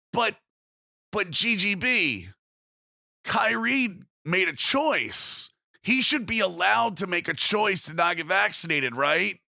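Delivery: sarcastic, high-pitched and drawn out. Playing devil's advocate by mimicking a comment seen on Twitter: sarcastic put-on argument. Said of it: "I hope you heard the sarcasm in my voice".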